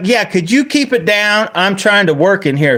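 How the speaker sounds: mock rude loud tone. Retelling how a woman answered you, a customer, mock-rude and loud. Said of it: "she was being rude, loud with me".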